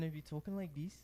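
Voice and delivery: Irish accent, put on. After a co-speaker's scottish try sounds irish, speaker demonstrates an irish accent. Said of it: "if I was talking like an Irishman".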